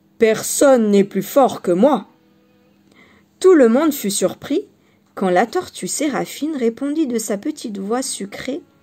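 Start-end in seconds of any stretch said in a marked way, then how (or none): 0.2-2.1 big, loud, deep booming voice. Reading a story aloud, the bear character declares his strength: big booming voice. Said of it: "s'écria d'une grosse voix".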